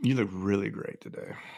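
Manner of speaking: hushed, unsettling, creepy delivery. Discussing changing one's tone, a host says the line in a creepy tone. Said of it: "you could change your tone and be like ... that's a little creepy".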